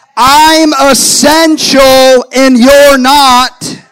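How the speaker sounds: slow, drawn-out, loud shout in a giant voice. Preaching, voicing Goliath calling out over the church: shouting as Goliath. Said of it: "Goliath is shouting from the abortion clinic".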